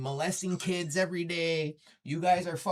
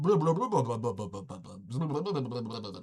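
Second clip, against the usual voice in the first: stuttering, mumbled, indistinct gibberish; 6 semitones lower than usual. Imitating how the other person talks: imitating someone mumbling. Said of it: "That's what it sounds like".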